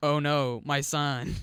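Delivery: emotionless, very slow, flat, stilted wooden delivery. Mocking a film father's reaction to his son's death: imitating flat, emotionless overacting. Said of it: "he doesn't sound like he has any emotion at all".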